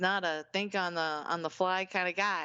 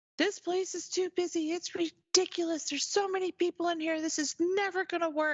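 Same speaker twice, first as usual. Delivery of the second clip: put-on very high-pitched, upset, ranting yelling; 12 semitones higher than usual. Retelling a phone call where the date yelled at them: imitating a date yelling. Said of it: "he's yelling at me".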